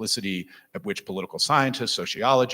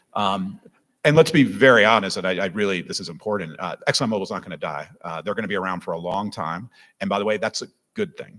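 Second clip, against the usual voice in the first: ordinary talk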